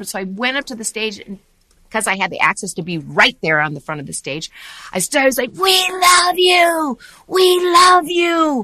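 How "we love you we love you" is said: mock shrill, very slow, loud, stretched-out scream. Recalling standing at the front of the stage, retelling a scream. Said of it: "And I just kept screaming".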